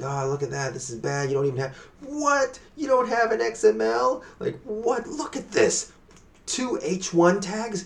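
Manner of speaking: very high, ballistic, building, rising outraged rant. Imitating SEO experts reviewing a website, imitating someone going ballistic. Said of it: "they just go ballistic over the most minor shit".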